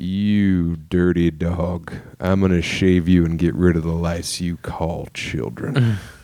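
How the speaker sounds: put-on Southern accent. Retelling what a dad said to a rival comic: imitating dad's Southern accent. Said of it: "My dad to Drew".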